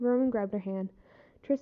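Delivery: ordinary delivery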